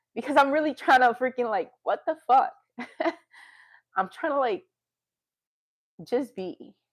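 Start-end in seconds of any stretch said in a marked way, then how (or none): 1.8-6.7 on the edge of crying, high voice cracking. A speaker apologizes, saying they are about to cry: tearful, voice breaking. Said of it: "I'm gonna cry".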